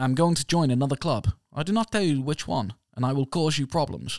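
put-on Dutch accent. Quoting a man speaking to the Ajax manager, in a Dutch accent. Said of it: "and I'll do this in a Dutch accent".

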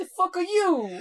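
bad put-on Brooklyn accent. Reading a woman's half-yelled line aloud, trying a suggested accent: put-on Brooklyn accent. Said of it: "like a Brooklyn accent for that bit?".

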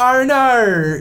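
bad Australian accent. Telling a joke about saying two letters, in a bad stereotypical australian accent. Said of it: "with a really bad stereotypical Australian accent".

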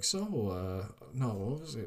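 ordinary delivery

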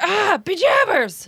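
very high, pained yelp of pain. Explaining old-fashioned cussing with a stubbed-toe example: pained exclamation. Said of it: "when you stub your toe and you're like".

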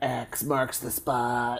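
put-on slow, soft, drawn-out eerie girl voice. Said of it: "It's so fucking creepy the way she says it".

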